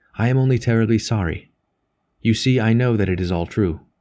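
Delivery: ordinary delivery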